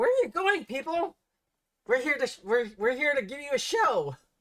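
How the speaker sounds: raspy, shrill, very high announcer intercom voice. A voice on the ship's intercom calls to the people leaving; raspy, shrill intercom voice. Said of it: "you hear like a a raspy kind of um uh, like shrill um uh, voice saying".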